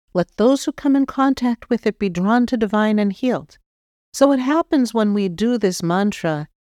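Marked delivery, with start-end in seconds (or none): none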